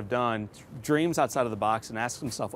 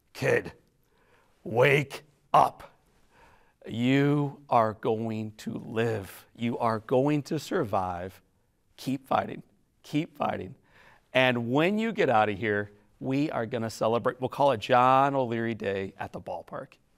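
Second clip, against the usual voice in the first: firm, stern tone. Retelling a hero's words at a burn center bedside: imitating a very firm voice. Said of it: "what he says very firmly was".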